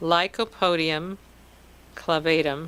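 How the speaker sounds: very slow, unhurried, carefully drawn-out delivery. Saying a homeopathy remedy name so listeners can catch it: really slow. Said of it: "I'll say this really slowly".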